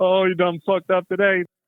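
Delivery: teasing through laughter. Retelling what a laughing best friend said: imitating a friend laughing while talking. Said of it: "he's laughing like this".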